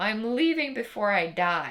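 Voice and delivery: flat shout. Retelling their own reply shouted back at the gym teacher: imitating own blunt yell. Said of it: "And I yelled back at him".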